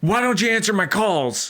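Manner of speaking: very high-pitched, furious, mad voice. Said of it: "so mad".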